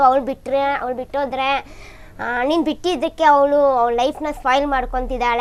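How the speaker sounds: ordinary talk, nothing marked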